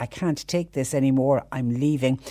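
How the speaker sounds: plain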